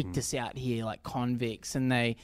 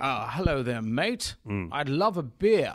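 put-on theatrical, stagey drama-school British accent, swooping. Describing an actor in a recommended film, doing a theatrical British accent. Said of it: "he talks in that really theatery British".

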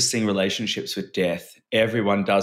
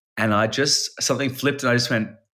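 ordinary talk, nothing marked

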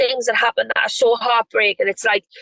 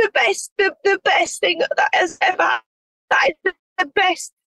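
tearful, choking up, voice catching, pitched up; 8 semitones higher than usual. Talking about her show covering the birth of her little girl, voice choking up, tearful. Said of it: "I think I'm actually gonna cry".

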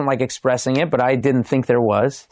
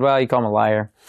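plain

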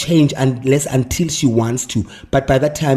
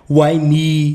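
normal talking voice

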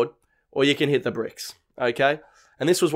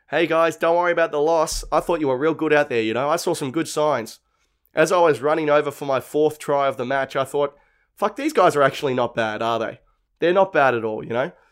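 ordinary delivery

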